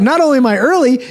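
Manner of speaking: exasperated, outraged outburst.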